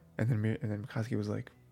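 plain

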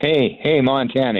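high, called-out yell. Retelling a man across the fence calling out: imitating a man yelling. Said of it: "he yells".

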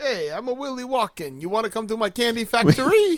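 New York Brooklyn accent. Joking with others that Christopher Walken is a little Willy Wonkish, in a Brooklyn accent. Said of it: "You sound like Joey Bananas from Brooklyn".

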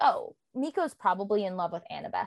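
normal talking voice

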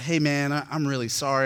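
speaking while crying. Retelling a phone apology to a former enemy: imitating own crying apology. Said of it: "And I was crying".

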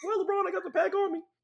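very high, loud voice. Acting out a chat between basketball players: Chris Paul impression. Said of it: "is that what he sound like?".

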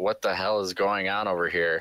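ordinary talk, nothing marked

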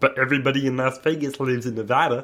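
froggy cartoon frog puppet voice. In a group conversation about Nevada, speaking in a Kermit the Frog voice. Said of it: "Why do you sound like Kermit the Frog?".

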